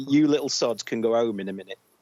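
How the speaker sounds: ordinary talk, nothing marked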